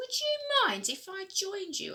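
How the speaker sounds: tiny, very high little voice. Narrator reading Oscar's question to the kites: Oscar's small voice. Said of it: "asked Oscar in a small voice".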